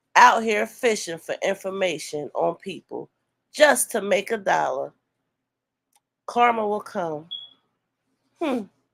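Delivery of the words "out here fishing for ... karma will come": usual speaking voice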